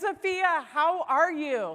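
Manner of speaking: bright, eager, excited, high and loud. Retelling picking up a neighbor's phone call: retelling an excited greeting. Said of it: "I picked up my phone excitedly".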